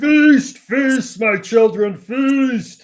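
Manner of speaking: very high, very slow, drawn-out yell. Voicing a villain releasing swarming bugs from a jar: yelling. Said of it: "he's yelling".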